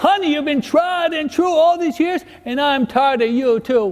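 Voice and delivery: very high-pitched, drawn-out southern drawl. Telling a joke about a man and his hard-of-hearing wife, in a southern drawl. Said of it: "in the southern drawl".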